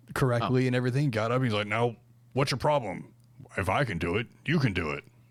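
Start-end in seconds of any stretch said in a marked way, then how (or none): 1.6-5.0 clumsy, bad put-on old-man voice. Retelling what a man said after jumping off a balcony onto mats, worst Vince impression. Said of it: "the worst Vince impression I've ever heard".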